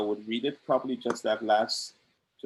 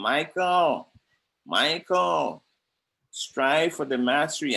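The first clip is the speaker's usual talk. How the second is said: put-on nasal nagging voice, higher; 4 semitones higher, 3 dB louder than usual. Retelling what a fellow soldier said from his locker: imitating Brother John's nasal nagging voice. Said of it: "he will nag again".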